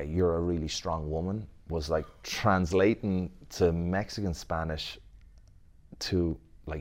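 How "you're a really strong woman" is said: ordinary talk, nothing marked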